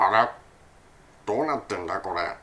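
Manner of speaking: very low, soft put-on cartoon creature voice. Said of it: "リロ& スティッチのスティッチみたいな".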